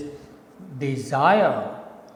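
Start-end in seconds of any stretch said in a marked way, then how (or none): 0.8-1.7 "desire" with stress hit on second syllable "zire". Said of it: "you speak it in a proper rhythm like this".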